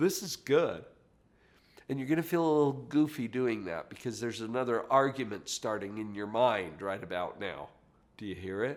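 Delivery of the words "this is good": gentle, light, lilting sing-song voice. Coaching the listener to practice the phrase as you did, light lilt to the voice. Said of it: "a little lilt to your voice".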